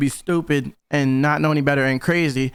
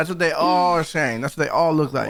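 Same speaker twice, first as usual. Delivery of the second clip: usual speaking voice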